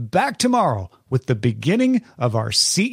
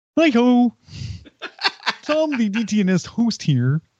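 put-on frog puppet voice; 10 semitones higher than usual. Sharing an outtake requested by another speaker: Kermit the Frog impression. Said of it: "Kermit, my love".

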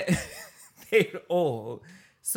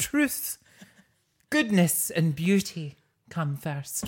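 put-on Scottish accent. Quoting a teacher from a play, in a put-on Scottish accent. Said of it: "your accent's great".

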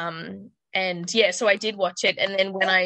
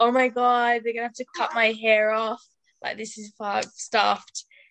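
mock crying, higher; 3 semitones higher than usual. Recalling a hairbrush stuck in own hair and calling for mum, acting out crying. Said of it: "And I was like crying".

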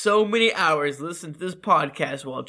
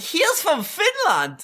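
very high, drawn-out comic German guy voice; 12 semitones higher than usual. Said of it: "I sounded like the Ger-, the German guy in Coming of Age".

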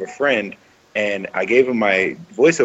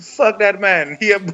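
very high-pitched, put-on Jamaican accent; 11 semitones higher than usual. Imagining how jamaican listeners might react, the speaker puts on a jamaican accent. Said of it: "I hope there's no Jamaicans who are just like".

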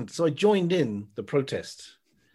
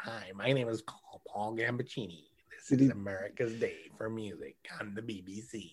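put-on murmured, quiet New York accent; 4 semitones lower, 9 dB quieter than usual. Showing listeners how a man on the BBC talks, do a Paul Gambaccini voice with a New York-y accent. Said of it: "he's got this kind of New York-y kind of accent".

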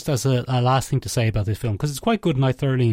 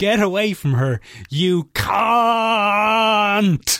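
mock slow, stretched-out scream; 8 semitones higher than usual. Retelling a film's final scene: imitating Ruth Bradley screaming. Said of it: "she screams".

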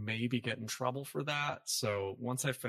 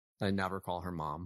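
ordinary talk, nothing marked

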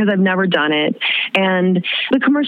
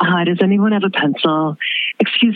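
mock woman's announcer-style voiceover voice. Retelling an audition lobby where a woman spoke in voiceover voice: imitating a woman's voiceover voice. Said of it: "making conversation in the lobby like this".

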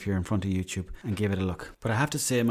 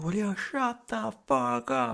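rough, very high, enraged furious yell; 12 semitones higher, 3 dB quieter than usual. Retelling the father getting out of bed at night, imitating a furious yell. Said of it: "He went absolutely nuts".

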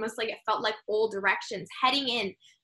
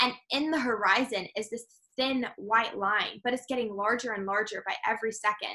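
usual speaking voice

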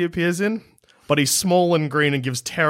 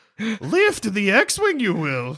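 put-on much higher, tiny old sage creature voice; 3 semitones higher than usual. Playing out a conversation with Luke in a gassy swamp, in a Yoda voice. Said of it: "You be Yoda".

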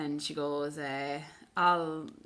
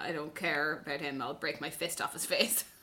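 ordinary delivery

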